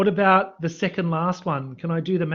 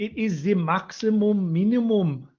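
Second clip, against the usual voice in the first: slow, put-on attempt at a German accent; 3 semitones higher than usual. Going over a maths question, reading the theorem's name in a German accent. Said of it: "That's my best German accent".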